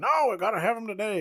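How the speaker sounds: acted, hammy, very corny movie-style scream, high and loud. Retelling a movie scene where a character demands help today: imitating a screaming character. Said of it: "He starts screaming".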